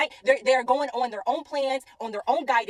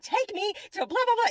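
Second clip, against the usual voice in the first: mock frantic, freaked-out, high panicked yelling; 9 semitones higher than usual. Recounting a panic, the speaker quotes herself yelling at the GPS, retelling panicked yelling. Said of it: "I'm yelling at G P S".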